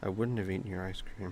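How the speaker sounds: very quiet, barely-there voice. Voicing a quiet character speaking to Mila at dinner: very quiet voice. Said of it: "very quietly".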